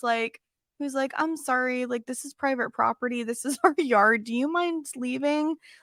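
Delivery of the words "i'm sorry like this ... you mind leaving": put-on polite, respectful tone. Retelling how a man asked a woman to leave their yard, imitating a polite tone. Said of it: "he was so polite".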